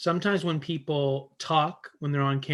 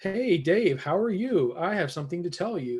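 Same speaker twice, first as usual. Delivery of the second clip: very formal, stiff, overly proper delivery; 4 semitones higher than usual. Speaker contrasts telling a friend something casually versus saying it in a very formal way. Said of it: "rather than if I'm like".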